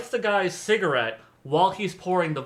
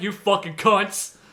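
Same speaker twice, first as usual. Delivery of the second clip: low, deep, angry women's voices; 4 semitones higher than usual. Imitating angry women watching skinny women eat: imitating deep-voiced angry women. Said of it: "you hang out with some really deep voiced women".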